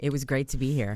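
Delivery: low, sultry, seductive voice. Signing off the show, asked to redo the goodbye line in a sexy voice. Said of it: "say it in a sexy voice".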